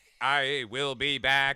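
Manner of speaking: loud, very slow, robotic machine-like voice. Retelling a friend performing a Terminator monologue, in a robotic Terminator voice. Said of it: "He's a robot".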